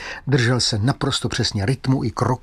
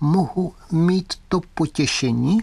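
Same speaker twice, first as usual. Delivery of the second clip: thin, high, slow doll voice, clockwork-like, from the head; 5 semitones higher than usual. Narrator reading Fritz speaking after the old man presses his button, thin voice. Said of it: "tenkým hlasem, který, jak se zdálo, vznikal někde vzadu hlavy".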